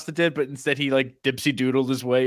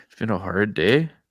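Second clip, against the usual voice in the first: put-on Canadian accent; 6 semitones lower than usual. Picturing a man with his head hanging down, imitating him: put-on Canadian accent. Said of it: "Sounded very Canadian there".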